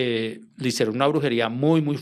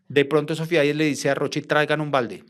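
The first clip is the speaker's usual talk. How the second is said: ordinary talk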